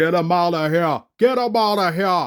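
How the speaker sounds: pretend yell.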